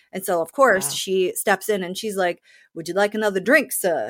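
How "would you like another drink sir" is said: put-on fake Southern accent. Retelling a character's act to win a movie part: imitating a put-on Southern accent. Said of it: "putting on all these, this accent and this affectation".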